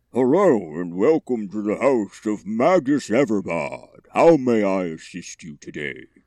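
muffled, dampened voice. Voicing a silk-stuffed suit of armor greeting visitors at the door, muffled voice. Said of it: "You hear a muffled".

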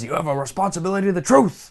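put-on pissed-off lecturing tone, pitch climbing. Retelling how he lectured all the kids, mock-angry lecture. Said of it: "he gets all pissed off and lectures all the kids".

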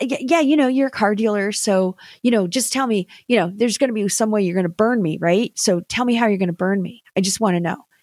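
cynical, passive-sounding delivery. Retelling asking a car dealer friend how he'll burn them: retelling own passive, cynical tone. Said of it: "I said it in a very passive, but extremely cynical way".

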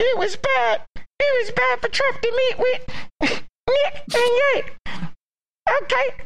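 very high, squeaky puppet voice. Answering a question put to Netanyahu, Elmo-like voice. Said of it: "It's like an Elmo voice".

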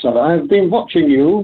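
put-on light German accent. Recalling what a man said after watching him drive up the hill, German accent. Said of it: "in his sort of German accent".

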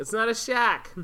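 put-on Boston accent in a very high voice. After admitting neither has it down, speaker tries one word again: Boston accent. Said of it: "that was better".

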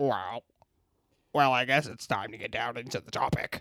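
alien creature voice speaking through a human.

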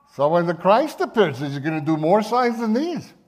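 Yiddish-inflected accent.

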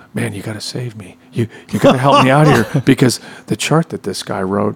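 put-on whispering voice. Retelling a friend's phone call during a rehearsal: imitating Mark whispering. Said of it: "he's whi-, whispering".

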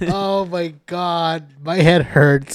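very slow, drawn-out speech laughing through giggles. Reacting to a funny story from another speaker, laughing while talking. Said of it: "I can't stop laughing".

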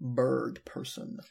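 flat, monotone character voice.

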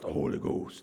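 really raspy, gravelly, rough-edged voice. Imitating how some people say Holy Ghost, in a really raspy voice. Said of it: "and a really raspy voice".

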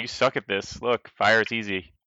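normal talking voice

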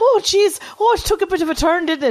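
put-on Irish accent pitched way up high. Telling the others how they just sounded, in an Irish accent impression of a friend. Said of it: "I only do one Irish Accent".

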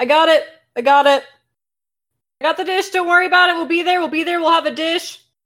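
reassuring voice called out from a distance. Retelling how Carolyn yelled from the other room, imitating Carolyn yelling. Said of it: "you can hear Carolyn just yelling".

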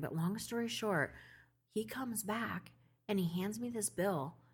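hushed whisper. Telling a story about a man who made her furious, whispering. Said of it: "I don't know why I'm whispering".

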